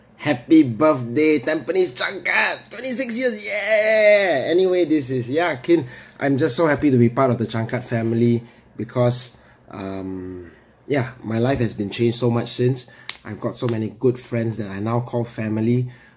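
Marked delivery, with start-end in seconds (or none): 0.2-4.5 yeah pitched high and drawn out. Club member wishing the Toastmasters club happy birthday in Donald Duck voice. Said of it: "I would like to wish you birthday in a special voice, my childhood hero, Donald Duck".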